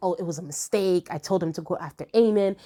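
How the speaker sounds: ordinary talk, nothing marked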